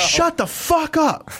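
acted, sudden angry snap, very high yell. Recounting a sleepless night on the back deck, retelling snapping at a neighbor. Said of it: "I snapped on my neighbor".

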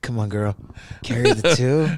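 suggestive, dirty put-on voice. Asked by another speaker to do math, responds in a dirty voice. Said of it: "use your dirty voice to do math".

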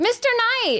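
very high, polite, courteous receptionist voice. Recalling waiting tables, the speaker quotes greeting a regular customer, in hotel voice. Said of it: "like in your hotel voice".

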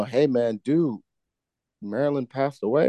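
ordinary delivery

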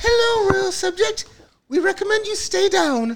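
very high-pitched, royal-sounding voice. Retelling a Kids in the Hall skit's vision of the Queen: the Queen impression. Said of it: "best, uh, impersonation of the Queen".

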